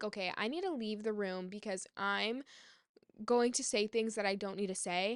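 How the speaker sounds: usual speaking voice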